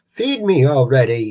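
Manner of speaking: silly, goofy cartoon-style voice. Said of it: "like a Snaggletooth Hanna-Barbera thing ... like that sort of silly voice".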